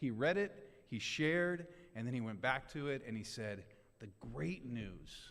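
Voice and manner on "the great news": acted, earnest, deeply convinced emphasis. Retelling how someone reread a phrase, imitating Jared's conviction. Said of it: "he said it with, like".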